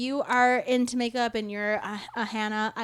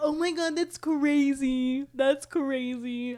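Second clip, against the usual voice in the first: very slow, high, crazy-sounding, stretched and drawn out; 5 semitones higher than usual. Retelling how a contestant reacts to dumb moments: imitating Leah's voice. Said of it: "I love the Leah voice".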